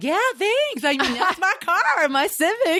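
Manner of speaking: very high, slow, drawling put-on voice.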